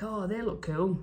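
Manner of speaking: put-on genuine Newcastle Geordie accent. Retelling what a young man said at a market: imitating a proper Geordie accent. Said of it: "a proper Geordie accent".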